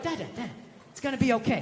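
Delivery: put-on soothing, calming little-kid voice, reassuring. Retelling his kid comforting him, hand on shoulder: imitating his little kid. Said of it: "She was just going like".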